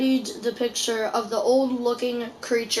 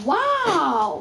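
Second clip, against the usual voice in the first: high, cracking, drawn-out wow; 5 semitones higher than usual. Reading Jack's line from a story aloud: voice cracking on wow. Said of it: "Let me do my voice cracking".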